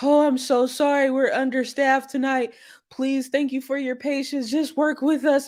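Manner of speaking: high, begging, over-apologetic pleading voice. Showing how not to update waiting guests: mock pleading tone. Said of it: "not in a pleading, like, begging way".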